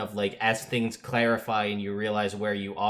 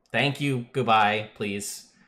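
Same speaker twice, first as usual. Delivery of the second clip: totally unbothered, nonchalant and unfazed. Voicing a woman telling embarrassed intruders to leave: totally unbothered. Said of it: "she's totally nonplussed about it".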